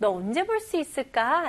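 ordinary talk, nothing marked

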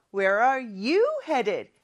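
you stressed, slow and careful.

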